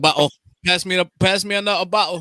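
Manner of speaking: bad put-on British accent. Speaker joking about Alfred's accent, in a bad British accent. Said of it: "that British accent".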